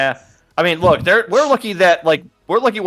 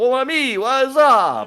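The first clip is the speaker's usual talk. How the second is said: slow, stretched-out, pitched-up character voice; 9 semitones higher than usual. Joking about a cartoon where Gambit walks by: Gambit voice. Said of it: "coulda had Gambit just walk by like".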